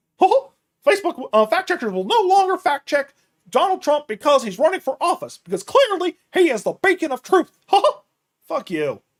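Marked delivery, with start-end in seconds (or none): 0.2-7.5 very high, loud, squeaky cartoon voice. Commenting on the news, switching back into a Mickey Mouse voice. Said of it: "Going back to Mickey Mouse voice".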